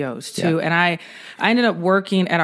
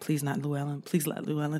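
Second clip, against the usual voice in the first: mock muttering under breath, quieter; 2 semitones lower, 11 dB quieter than usual. Retelling being assigned a training officer, imitating own muttering under breath. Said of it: "and I'm under my breath".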